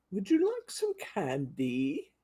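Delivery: sing-song witchy voice. Showing Halloween cards, voicing the skeleton card: witchy voice. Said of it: "That's my witchy sound".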